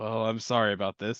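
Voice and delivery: voice kept low and subdued. Voicing Rito before he stabs two survivors, in a low voice. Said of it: "kind of just in a low voice".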